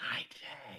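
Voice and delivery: breathy, hushed, very quiet whisper. Greeting a character walking up the stairs, in character: whispering. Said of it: "I, like, whisper".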